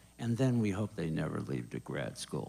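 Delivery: very low, deep, evil villain voice. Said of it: "that was my evil voice".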